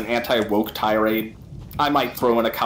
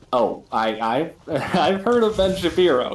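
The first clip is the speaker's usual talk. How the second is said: high, sneering, taunting put-on mocking voice; 6 semitones higher than usual. Retelling what they said back to him, in a put-on mocking voice. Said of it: "in that kind of like mocking mocking toys voice".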